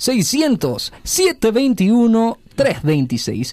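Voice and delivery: put-on broadcaster-style radio announcer voice. Giving listeners a phone number again, this time in an announcer voice. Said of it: "con voz del locutor".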